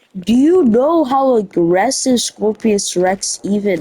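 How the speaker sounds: ordinary talk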